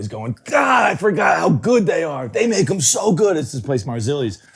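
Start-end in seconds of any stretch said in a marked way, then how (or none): 0.4-3.4 put-on excited raving, slower. Recounting his buddy eating subs in the car, imitating a friend's excited raving. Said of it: "he's punching the steering wheel".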